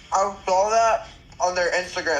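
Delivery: talking through a mouthful of food. Chatting with another speaker while eating: talking while eating. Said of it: "Sorry if I sound like I'm eating because I am".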